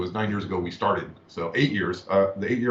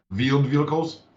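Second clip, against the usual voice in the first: put-on German accent, pitched up; 6 semitones higher, 3 dB louder than usual. Quoting how a streamer says wheeled vehicles, in a put-on german accent. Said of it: "like with a German accent".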